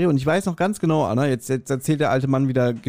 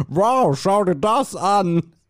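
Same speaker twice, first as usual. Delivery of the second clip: fake, bad, very drawn-out, slow, high-pitched American accent; 5 semitones higher than usual. Mimicking a visitor at a castle with his family, in a bad American accent. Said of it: "mit diesem schlechten amerikanischen Akzent".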